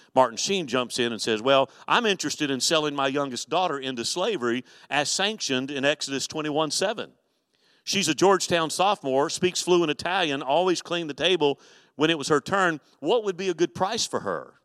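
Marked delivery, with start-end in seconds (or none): none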